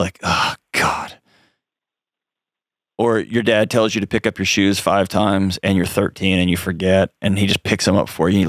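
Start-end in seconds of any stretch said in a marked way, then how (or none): 0.2-1.2 low, whispered, disgusted tone. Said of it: "looks from their parents of just disgust".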